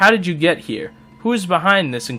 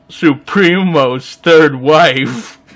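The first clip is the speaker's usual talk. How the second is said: moaned, with "wife" stretched long; 5 dB louder than usual. Narrating a game scene as the narrator, in a Droopy Dog narrator voice. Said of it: "the narrator is now Droopy Dog".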